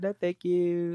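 put-on Australian accent. Imitating a podcaster politely refusing someone at a hotel door: imitating an Australian accent. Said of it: "it's the Australian accent".

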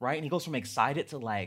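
ordinary delivery

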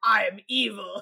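mock-evil growly villain voice. Comparing sub and dub versions, speaker mimics the dub's mock-evil growly villain voice. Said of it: "Because it's the growly I'm evil yeah".

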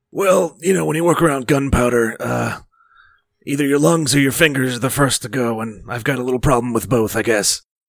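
loud, scratchy, rough-throated voice. Asked about sounding scratchy, the character who works around gunpowder answers: scratchy voice. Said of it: "Sound pretty scratchy".

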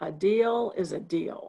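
slow, drawn-out growling words. Retelling an argument, quoting the man's curt reply, retelling a growl. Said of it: "He said in a growl".

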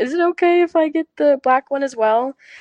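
mock shy, meek voice. Retelling what a woman asked her, speaker is imitating a timid question. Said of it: "she was like timidly asked me".

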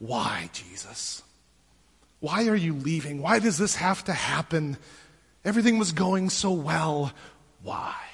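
very low, hushed, heartache-filled, disappointed pleading. Acting out two men asking someone why he is leaving, acting out disappointed asking. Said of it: "the disappointment from Philip and Thomas basically asking".

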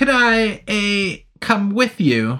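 uneasy, nervous voice, slightly high-pitched. A man asks Anthony a question, asking nervously. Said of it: "The man asked nervously".

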